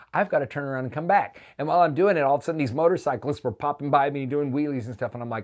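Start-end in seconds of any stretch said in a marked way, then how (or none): none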